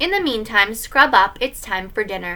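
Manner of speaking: usual speaking voice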